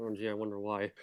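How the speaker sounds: muttering under breath. Voicing a character reacting to another's boast: muttering under his breath. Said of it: "he just mutters under his breath".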